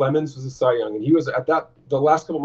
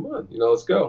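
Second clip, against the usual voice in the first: light, goading, teasing, mocking tone. Retelling taunting a fan who was cussing him out: imitating own mocking taunt. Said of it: "I start kinda mocking him a little bit".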